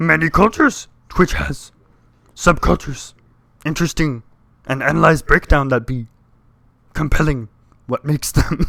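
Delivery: put-on wise little alien voice. Reading out the last message received, doing a Yoda impression. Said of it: "I'm gonna try and Yoda it".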